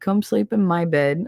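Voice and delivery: ordinary talk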